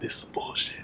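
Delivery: sneaky, hushed whisper under the breath. Retelling a remark made during a presentation: retelling a whisper. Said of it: "trying to be caught whisper".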